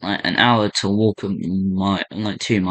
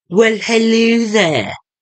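very high, loud put-on posh English accent; 7 dB louder than usual. Greeting someone on arrival at the docks, in a posh British accent. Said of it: "In a posh British accent".

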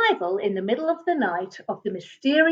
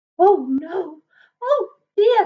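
very slow, high, drawn-out, scared little squeak; 7 semitones higher than usual. As a great shadow passes over him, the character squeaks in fright. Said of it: "He squeaked in fright".

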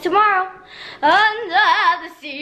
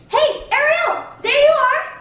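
very high, slow fish character voice; 10 semitones higher than usual. Reading audition lines as Flounder: Flounder voice. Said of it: "I'm going to read for Flounder".

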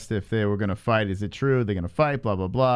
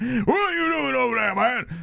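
very high, slow, drawn-out, creaky croak; 13 semitones higher than usual. Voicing a man in the corner of a fight photo: voicing the guy in the corner. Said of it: "Why does he have to sound like that?".

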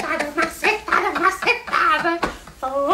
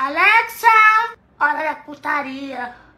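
loud, raised calling voice; 5 dB louder than usual. Told to speak louder, calling the smart speaker again: louder on request. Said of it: "Fala mais alto".

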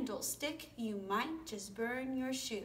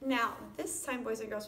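ordinary talk, nothing marked

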